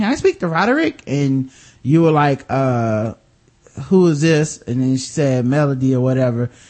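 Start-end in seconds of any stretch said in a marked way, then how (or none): 0.0-1.0 high-pitched, put-on girly phone voice.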